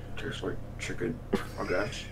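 very quiet whisper, talking through mouth stuffed with food. Player voicing his character, mouth still full of mouse; talking with mouth full. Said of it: "with my mouth still full of mouse".

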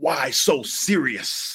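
breathy, whispered villain scream, breathed out as hushed shriek. Retelling a DVD menu that plays Heath Ledger's line: imitating Heath Ledger's Joker scream.

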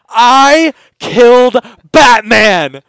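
piercing shrill yell, very high and very loud. Retelling swinging open the door to the outside: imitating a yell. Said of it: "and I yelled".

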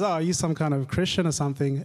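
usual speaking voice

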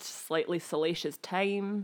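ordinary talk

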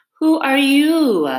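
loud, lazy, sleepy drawl. After a long silence, the Caterpillar addresses Alice in a languid, sleepy voice. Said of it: "addressed her in a languid, sleepy voice".

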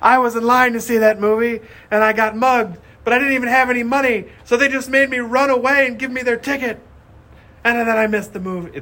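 put-on very high-pitched, shrill yelling rant. Recounting a movie scene where a girl drains others with sad stories, imitating her yelling. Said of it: "So the one girl yells like".

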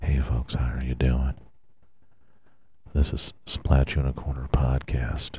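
ASMR-style soft speaking. Podcast host opening an episode done as asmr, soft asmr voice. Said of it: "We're doing a little ASMR today".

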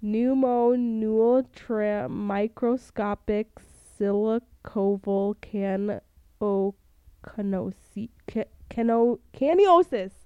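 really slow delivery with drawn-out syllables. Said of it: "I'm gonna say this really slow".

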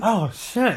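on the verge of tears, high-pitched. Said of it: "you're almost crying".

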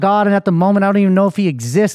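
normal talking voice

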